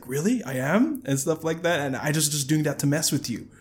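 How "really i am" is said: bewildered, confused, puzzled disbelief. Retelling a scene, the speaker acts out a man's reply, acting out his confusion. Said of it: "he's all confused".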